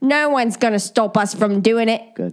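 put-on London Cockney accent. Quoting a cheese-roll winner, trying her words again in a cockney accent. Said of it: "what's Cockney sound like?".

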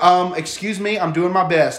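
put-on rude tone. Retelling what she said while being rude about the needle: imitating someone being rude. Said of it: "she's being rude to me".

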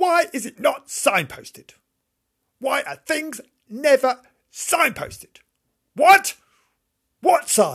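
very high, shrill screeching at full volume. A stressed shopper can't find the click and collect point, yelling. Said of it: "I'll stop yelling now".

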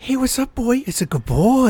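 high, friendly voice like talking to a dog. Mocking a friend who talks to babies like they're dogs: imitating dog talk. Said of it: "You talk to babies like they're dogs".

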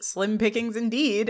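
ordinary delivery

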